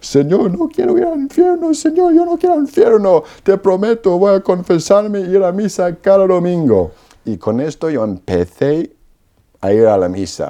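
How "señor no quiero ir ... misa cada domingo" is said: mock very high, tearful, sobbing crying. Retelling falling to the floor pleading to the Lord: imitating own past sobbing plea. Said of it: "estoy llorando como una Magdalena".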